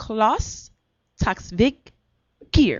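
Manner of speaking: careful, deliberate, very slow delivery. Introducing an Oscar-nominated guest with a hard name, name said very slowly. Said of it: "I'm gonna say it very slowly".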